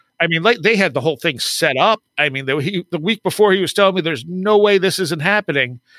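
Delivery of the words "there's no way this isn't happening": normal talking voice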